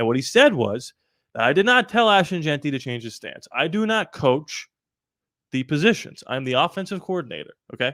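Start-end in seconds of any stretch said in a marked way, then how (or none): none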